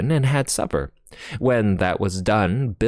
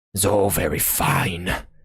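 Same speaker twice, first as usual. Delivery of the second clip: ordinary delivery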